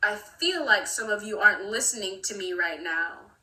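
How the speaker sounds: mock confrontational, aggressive and pointed. Retelling what a teacher said to the class: imitating an aggressive remark. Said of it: "the way he said it was so aggressive".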